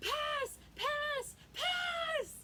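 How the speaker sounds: very high, stretched-out, drawn-out yelling. Recounting a game, acting out Achinthia yelling pass, imitating Achinthia yelling pass. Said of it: "was yelling pass".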